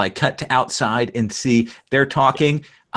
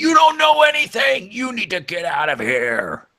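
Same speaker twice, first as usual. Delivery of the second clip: very high, shrill, swooping yelling, pitch all over; 10 semitones higher than usual. Narrator voicing Mr. Bear as he turns on you, Mr. Bear yelling. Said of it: "yells at you".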